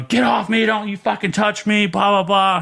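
acted, high, out-of-control raging cussing scream. Recalling being taken to medical, the speaker reenacts screaming at the medical staff. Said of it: "I guess I'm screaming".

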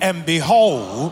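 loud, high, slow proclaiming delivery.

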